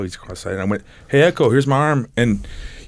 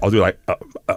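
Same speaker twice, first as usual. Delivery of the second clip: ordinary talk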